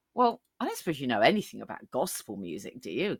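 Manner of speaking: mock scornful, condescending, low, disdainful tone. Retelling what a man said as he turned back around, mock-disdainful. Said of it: "He said it with such disdain".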